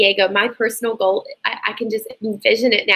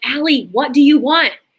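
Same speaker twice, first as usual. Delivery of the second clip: put-on screaming voice, higher and louder; 4 semitones higher, 5 dB louder than usual. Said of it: "screaming at her".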